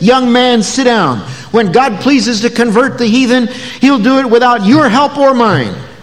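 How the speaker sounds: mock agitated tone, pitched high. Retelling the meeting moderator rising to rebuke a young man, imitating an agitated voice. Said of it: "in an agitated voice said".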